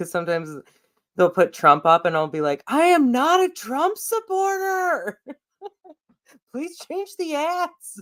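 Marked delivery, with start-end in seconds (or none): 2.7-8.0 put-on yelling. Retelling yelling at ads on screen: imitating own yelling.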